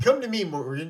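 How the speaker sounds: ordinary delivery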